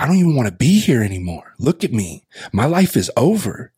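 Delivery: put-on upset yelling outburst, high-pitched. Recounting answering their mom's question about what's wrong, retelling own yell. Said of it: "I'm yelling".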